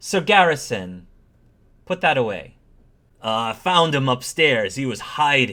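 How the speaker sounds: very authoritative, firm commanding voice. Narrating a story, speaking as a woman addressing sir garrison, authoritative. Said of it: "the woman very authoritatively says".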